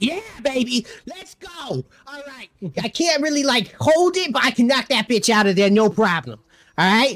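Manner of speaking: high squirrel voice. Voicing a squirrel agreeing to knock a gun down: Bean Nut squirrel voice. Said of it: "and he's like".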